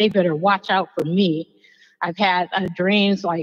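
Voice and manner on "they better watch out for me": normal talking voice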